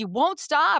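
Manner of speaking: acted, high-pitched, furious angry outburst. Retelling Emily snapping at Gina for interrupting: imitating Emily's angry outburst. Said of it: "she was really mad".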